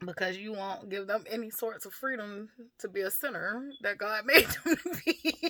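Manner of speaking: words spoken through laughter. Complaining about parents who give their children no freedom, laughing while talking. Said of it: "I'm sorry that I'm laughing at this".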